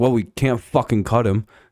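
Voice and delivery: normal talking voice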